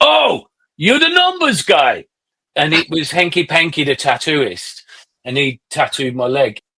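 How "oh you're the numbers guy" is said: put-on very high, swooping, lilting sing-song Dutch accent. Retelling what the tattooist said to you, do a Hanky Panky impression with a Dutch accent. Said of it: "I like that impersonation".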